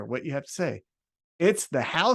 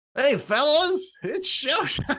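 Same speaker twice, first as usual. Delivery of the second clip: put-on very high, squeaky goth grandpa voice; 10 semitones higher than usual. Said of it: "comes in like Grandpa Goth and is like".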